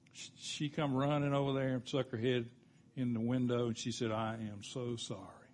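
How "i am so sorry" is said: put-on tearful voice, lower and quieter. Retelling a woman's apology at the car window: imitating someone crying. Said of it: "she was crying".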